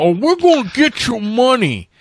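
put-on, very high sketch-comedy lawyer voice. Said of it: "that Tracy Morgan lawyer from, uh, Saturday Night Live".

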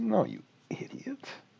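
insulting, rude aside whispered under the breath. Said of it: "they don't say it like that".

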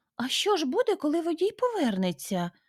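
very high, fearful, frightened voice. Narrator reads a storybook character's question to a man, asked frightened. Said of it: "злякано запитала Лотта".

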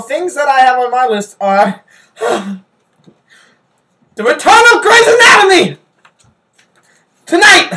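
blurted out, loud, high shout. Asked what's on their list, answering by shouting. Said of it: "You don't have to shout it".

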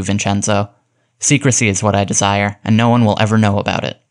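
usual speaking voice

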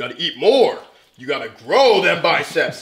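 mock yelling, loud and urgent. Retelling how Rich Piana pushes viewers to eat: imitating Rich Piana yelling. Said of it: "he'll just start yelling at you".

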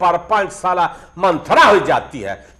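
angry, high, loud ranting.

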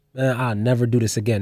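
mock mumble under breath. Retelling what a guy said after coming downstairs, mumbling under his breath. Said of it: "all I can hear him mumbling under his breath".

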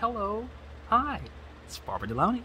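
very high, polished, sing-song proper phone voice. Imitating her mom answering the phone, in Barbara Delaney's proper phone voice.

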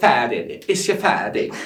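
mock British accent, oddly voiced. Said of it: "Öyle konuşma".

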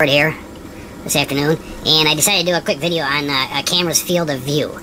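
squeaky chipmunk voice. Introducing a quick camera video, in a chipmunk-like high voice. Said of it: "It's Alvin and the bloody chipmunks".

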